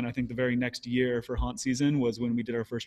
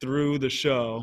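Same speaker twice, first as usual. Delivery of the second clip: plain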